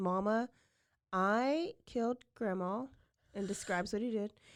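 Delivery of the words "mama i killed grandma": put-on, completely calm, slow, matter-of-fact voice. Speaker retells a man phoning Mama with terrible news, imitating a very calm voice. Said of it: "he very calmly".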